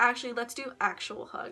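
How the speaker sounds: normal talking voice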